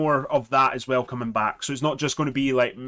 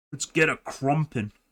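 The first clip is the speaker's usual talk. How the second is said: clumsy, bad put-on orc voice. Speaker briefly tries talking like an orc, then apologizes: orc voice. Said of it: "I tried to talk like an orc there".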